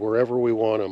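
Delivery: plain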